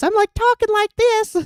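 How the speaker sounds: fake, very high-pitched put-on talking voice. Describing an old clip of themselves, showing the fake voice they used: high-pitched put-on voice. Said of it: "I'm like talking in a high pitched voice".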